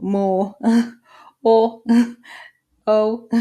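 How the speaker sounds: loud, laughing through the words. Demonstrating vowel sounds to learners, laughing while talking. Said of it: "I'm laughing because".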